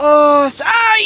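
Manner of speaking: sudden, high, loud pained yelp.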